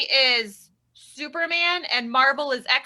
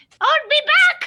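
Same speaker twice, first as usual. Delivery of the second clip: very high, loud, horrible squeaky voice; 14 semitones higher, 6 dB louder than usual. Playing iconic movie characters as Elmo: horrible Elmo voice. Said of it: "if Elmo played iconic movie characters".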